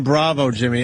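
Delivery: ordinary talk, nothing marked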